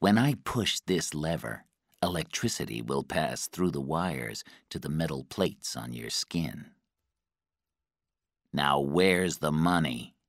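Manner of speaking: ordinary delivery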